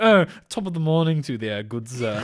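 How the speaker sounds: fake, smarmy, upper-class English gentleman accent. Mocking American actors playing high-class British gentlemen: mock high-class British accent. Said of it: "American actors depicting high-class British gentlemen".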